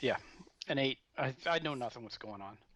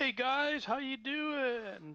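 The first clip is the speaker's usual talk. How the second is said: put-on drunken charismatic dwarf voice, much higher, slower; 11 semitones higher than usual. A player's dwarf walks in and greets the group, in a drunken charismatic dwarf act. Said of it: "my dwarven charismatic drunken act".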